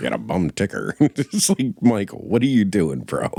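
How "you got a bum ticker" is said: forties radio announcer voice, lower. Quoting a man's line to Hardigan, old-timey forties radio announcer voice. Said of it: "sounding like like an old timey, forties radio announcer".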